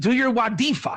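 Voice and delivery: light put-on yell. Retelling yelling at the class to do homework: imitating own yelling. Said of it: "I was yelling at them".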